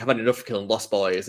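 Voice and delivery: ordinary talk, nothing marked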